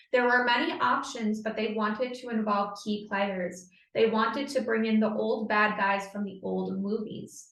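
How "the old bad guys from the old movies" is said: ordinary talk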